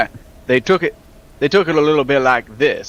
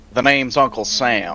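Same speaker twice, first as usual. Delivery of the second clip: put-on Old West cowboy accent. Players agree to do cowboy accents and one introduces himself, in a cowboy accent. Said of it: "Oh, we're doing cowboy accents".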